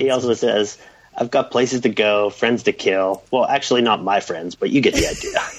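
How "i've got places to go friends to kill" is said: ordinary talk, nothing marked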